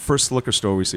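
plain

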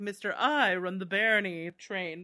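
announcer-style voiceover. Picturing a character voiced by Kelsey Grammer: Kelsey Grammer voice. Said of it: "you could picture him being like".

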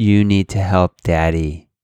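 mock-firm tone. Father retelling what he says to his daughter Alia, retelling a firm voice. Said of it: "with a certain firmness in my voice".

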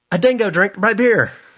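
terrible put-on Australian accent, very high. A quick joke about a dingo, in a terrible Australian accent. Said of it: "Terrible Australian accent".

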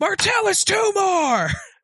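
very high, shrill scream. Voicing a character slamming mugs on the table: screaming. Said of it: "slams them on, on her table and screams".

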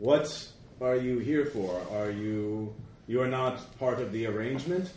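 reverberating, buzzing, droning voice. Voicing a creature whose voice reverberates in the players' heads: buzzing voice. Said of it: "you hear a buzzing voice".

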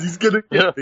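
put-on pathetic, defensive tone. Imitating the other speaker's reaction to a question: imitating a pathetic, defensive tone. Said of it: "see how pathetic you sound".

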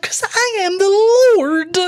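put-on high, very slow, petulant stamping child tantrum. Mocking a scripture passage, acting out foot stomping: imitating a petulant child. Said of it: "stomps his feet".

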